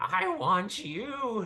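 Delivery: very high, creepy monster voice. Voicing a creature who turns to the next victim: creepy creature voice. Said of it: "laughs creepily like a weirdo".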